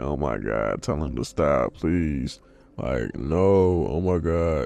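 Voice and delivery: tearful, sobbing, crying, begging voice. Retelling a scene where Gohan begs on the floor: imitating Gohan crying. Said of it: "on the floor crying like".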